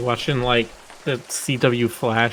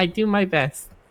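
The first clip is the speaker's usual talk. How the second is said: put-on high little girl voice; 5 semitones higher, 3 dB quieter than usual. Retelling a VR chat video about an Anomalocaris avatar: imitating a little girl's voice. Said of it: "this little girl's voice, or small woman's voice".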